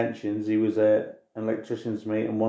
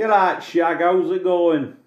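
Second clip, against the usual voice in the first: put-on East Midlands Derbyshire accent; 8 semitones higher, 6 dB louder than usual. Recalling the accent they had after moving from Buxton, Derbyshire 'right duck' accent. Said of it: "really very distinct sort of "right duck" sort of accent".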